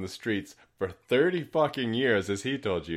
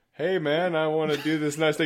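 mock friendly tone, higher pitch; 6 semitones higher than usual. Retelling a stranger's sudden switch in manner: imitating a friendly stranger. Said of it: "the artifice of the friendly stranger".

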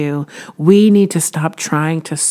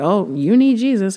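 patronizing, preachy, condescending talking-down tone; 4 semitones higher than usual. Showing how the line would sound if said down to people: imitating a condescending tone. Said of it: "I don't say that in a condescending, like".

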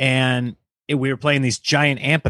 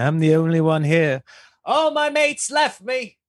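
put-on slow yell in an English accent; 4 semitones higher than usual. Retelling how a man with long hair yelled at the sky, being funny: english accent, yelling. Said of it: "He's got an English accent".

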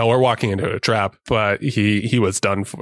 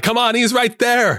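very high-pitched shout; 12 semitones higher than usual. Retelling watching a movie scene, imitating yelling at the screen. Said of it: "you're just yelling at the screen".

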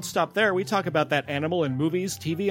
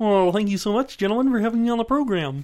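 high, raised felt frog-puppet voice; 5 semitones higher, 5 dB louder than usual. Thanked as a guest on the program, a performer answers in a Kermit voice. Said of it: "amazing that. Kermit impersonation".

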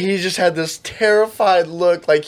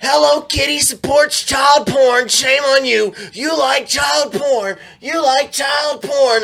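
mock high-pitched accusing screaming, over and over; 9 semitones higher than usual. Retelling a stranger's accusation on the street: imitating someone screaming. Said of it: "And just start screaming this out".

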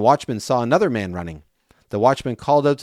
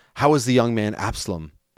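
ordinary delivery

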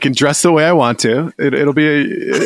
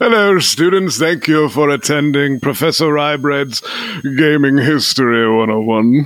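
put-on British accent. Asked to demonstrate lecturing to a class, in a faux British accent. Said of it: "Talking a faux British accent the entire time".

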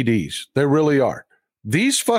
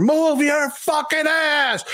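acted, losing-it scream, very high and drawn out; 12 semitones higher than usual. Recounting a parking-lot chase, the speaker re-enacts screaming at a man. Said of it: "screaming at this motherfucker".

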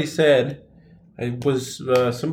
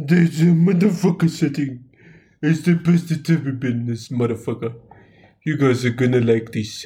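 put-on, fake Jamaican accent. Testing sound settings for the audience, in a fake jamaican accent. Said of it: "I'm a Jamaican man".

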